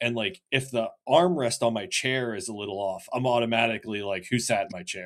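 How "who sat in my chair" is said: put-on grouchy, grumpy old man voice. Acting out own reaction to a moved chair at work: imitating a grumpy old man. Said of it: "I've turned into a grumpy old man".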